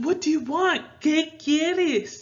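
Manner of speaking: rude, annoyed tone. Showing how a spanish question sounds when someone bothers you: rude. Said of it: "when you say it like that, it is very rude sounding".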